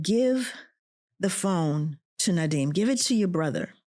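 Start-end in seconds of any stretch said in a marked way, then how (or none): none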